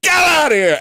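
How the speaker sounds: sudden, shrill, very high put-on scream. Retelling how his wife screamed at a truck: imitating a scream. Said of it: "she just screamed".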